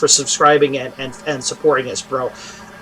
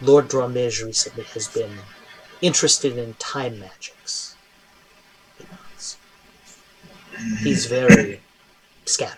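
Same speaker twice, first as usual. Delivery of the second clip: hushed, close, confidential whispered aside; 3 semitones lower, 6 dB quieter than usual. Narrating a scene, voicing Jalarzi speaking into Minya's ear, Jalarzi whispering in the ear. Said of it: "Jalarzi whispers".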